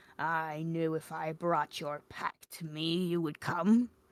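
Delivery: creaky, rusty vampire voice, sounding long unused. Narrator reads the vampire speaking to the slayer, in a rusty vampire voice. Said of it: "The vampire's voice seemed rusty".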